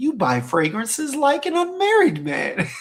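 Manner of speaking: big, swooping villain voice. Reading out a message someone sent, in Bane voice. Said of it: "in my Bane voice".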